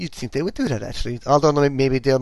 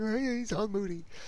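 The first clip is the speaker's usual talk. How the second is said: high, soft mock moody voice. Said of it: "and it's like".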